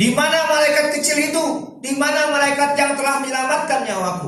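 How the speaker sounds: loud shout.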